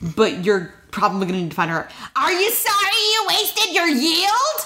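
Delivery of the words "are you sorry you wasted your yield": very high-pitched cartoon witch voice. Describing obnoxious characters, trying to sound like the mom: imitating the mom. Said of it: "I'm going to try to sound like the mom".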